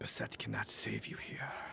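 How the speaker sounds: quiet, breathy whisper. A game narrator voices an unseen speaker addressing a player from the flank, whispered voice. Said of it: "you hear this whispered voice".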